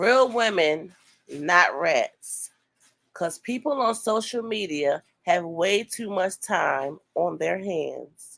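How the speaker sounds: plain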